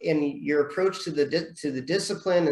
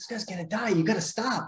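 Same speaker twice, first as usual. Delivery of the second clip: half-whispered, slightly higher, close; 5 semitones higher, 4 dB quieter than usual. Retelling how their senior half-whispered in their ear during testing, retelling a half-whisper. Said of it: "He's like whispering in my ear".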